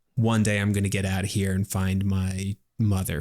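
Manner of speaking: usual speaking voice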